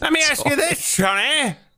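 put-on very high, old-timer rocking-chair old man voice. Repeating the other speaker's question back: imitating an old man in a rocking chair. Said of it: "You sound like an old man in a rocking chair".

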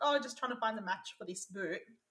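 ordinary talk

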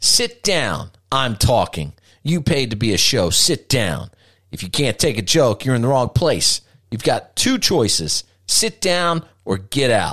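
acted sneering tone. A performer recalls turning on an audience member in the front row, retelling a sneer.

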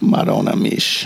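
whispered, breathy, hushed fake Italian accent. Doing a character while chatting, in a fake italian accent. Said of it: "I'm appropriating a fucking Italian accent".

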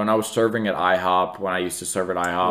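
ordinary delivery

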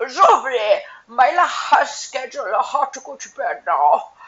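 high, loud, slow talk as if chewing food. Imitating Yara talking like her mouth is full of food. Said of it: "her mouth is full of really delicious food".

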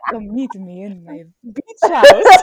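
loud, booming vampire voice with wild swings. Retelling Ethan's text inviting her to meet at midnight: Ethan's vampire voice. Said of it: "In his vampire voice".

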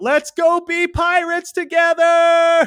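shrill, very loud, long, drawn-out hollering yell. Retelling a scene of a character at night yelling out for someone: retelling a yell. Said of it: "he's yelling out".

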